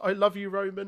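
shrill, very high, loud scream. Retelling a crowd moment, the speaker acts out the woman behind the barricade: retelling a woman's scream. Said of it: "the woman behind the barricade just screams".

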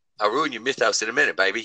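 put-on drawling New Zealand accent. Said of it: "Let me do it in his voice".

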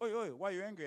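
loud, high calling-out voice of a dad. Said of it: "And the Samoan dad's going".

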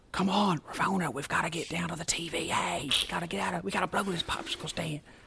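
high, hushed stage whisper. Mocking an actor who half-whispers in every scene: imitating Owen Wilson half-whispering. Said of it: "why is he always whispering".

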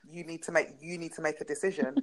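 ordinary talk

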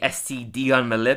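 ordinary delivery

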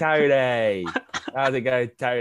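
Cockney-ish geezer voice, loud and drawn-out. Retelling a voicemail caller greeting the speaker, in a geezer voice. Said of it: "a really geezer voice".

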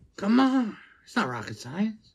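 high, lively voice with wide swooping pitch. After comparing your speech impediment to a politician's, speak in a Joe Biden impression. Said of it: "It's just like Joe Biden".

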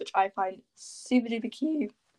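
cracked voice, breaking in the middle of phrase. Talking through hairstyle ideas, the speaker's voice cracks mid-sentence. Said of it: "my voice just cracked".

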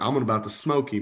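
ordinary delivery

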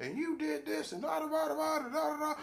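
over-the-top, high, shouted screaming fit. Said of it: "'Cause you could be like".

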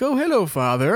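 prim, calm, proper, well-mannered politeness. Imitating Boba Fett greeting his father: calm and proper. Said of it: "Calm and proper".

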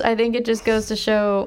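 ordinary talk, nothing marked

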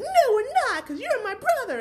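very high, loud put-on voice. Recapping a scene, voicing a character's reply to her brother, Mia voice. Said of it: "I can't believe I did that voice".

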